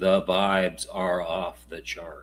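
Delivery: utterly flat, low monotone delivery. Asked whether it could be said more monotone, saying it very monotone. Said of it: "Can I say that any more monotone?".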